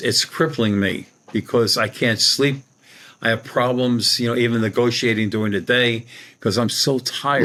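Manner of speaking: normal talking voice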